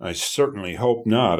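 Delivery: ordinary delivery, nothing marked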